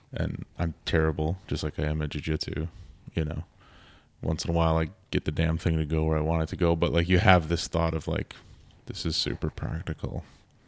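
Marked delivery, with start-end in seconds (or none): 8.8-10.2 sarcastic tone posing as sincere, fake-earnest. Retelling a thought while fumbling at the gun range: sarcastic retold thought. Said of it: "I'm being sarcastic".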